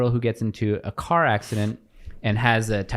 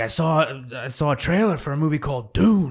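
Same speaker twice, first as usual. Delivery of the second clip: bad put-on gravelly tough-guy voice, pitched higher; 4 semitones higher than usual. Retelling a call-in about Dune: horrible Al Pacino impression. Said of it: "It's a horrible Al Pacino".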